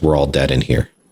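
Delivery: put-on flat, deadpan child voice. Retelling how a child stopped in the basement: imitating a child's flat deadpan. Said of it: "straight face".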